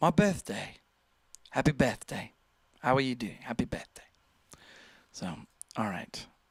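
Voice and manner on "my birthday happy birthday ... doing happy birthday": put-on prim, posh upper-crust British accent. Reading out a viewer's birthday message: imitating a posh British voice. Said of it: "almost like posh British".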